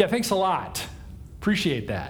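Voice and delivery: as sarcastic as possible, heavy, dripping. Imagining the conversation on meeting Moses and Aaron, heavily sarcastic. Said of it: "In as sarcastic as a tone as possible".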